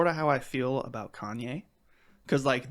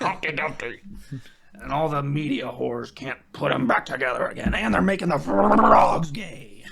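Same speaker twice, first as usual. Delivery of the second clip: ranting put-on radio-host voice, much louder; 7 dB louder than usual. Saying it was not a military spoof but a conspiracy rant, Alex Jones impression. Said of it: "That's my Alex Jones voice".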